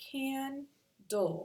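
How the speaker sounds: high, slow "candle", stressed, dull at the end.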